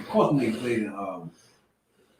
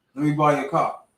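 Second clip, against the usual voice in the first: plain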